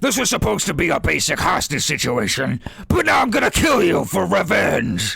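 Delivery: very high, loud, rough, booming monster shout. Voicing the bugbear as it speaks up: loud, booming bugbear voice. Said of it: "like in very loud, booming voice".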